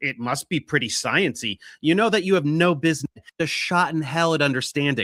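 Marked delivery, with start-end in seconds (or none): 0.0-1.6 sneering sarcastic delivery. Quoting a critic's response to his science tutorial: imitating a sarcastic remark. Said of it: "sarcastically pronounce".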